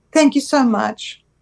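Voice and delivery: tearful crying. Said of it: "now I've made her cry".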